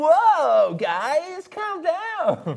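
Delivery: wacky, very high, very slow, drawn-out cartoon voice. Showing how Ben sounds in the speaker's head: imitating Ben. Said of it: "that's how Ben sounds in my head".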